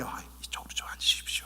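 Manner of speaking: quiet, soft, hushed whisper. Speaker shows how a church usher seats a newcomer, in a soft, quiet voice. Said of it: "조용하게".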